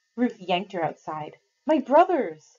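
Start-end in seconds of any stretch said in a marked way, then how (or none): 1.7-2.3 sudden, eager, high, loud, hopeful cry. Mercy, told by Ruth that she has news, cries out to her, crying out. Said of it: "cried Mercy".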